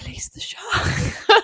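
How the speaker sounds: soft, secretive, close-in whisper. Creeping up to a sleeping crewmate in character, whispering in character. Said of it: "and I just whisper".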